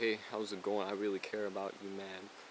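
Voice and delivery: soft, flat, droning monotone without inflection. Showing how someone sounds talking to you in a monotone way: flat monotone delivery. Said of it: "they're in monotone way".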